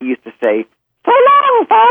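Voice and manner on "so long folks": loud squeaking falsetto. Retelling the cartoon jester's sign-off at the end of Warner Brothers cartoons, in a Mickey Mouse falsetto. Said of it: "started with a falsetto like Mickey Mouse".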